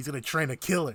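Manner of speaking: ordinary talk, nothing marked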